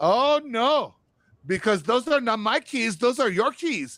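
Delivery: put-on motherly voice with Filipino accent. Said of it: "those are fucking Filipino moms".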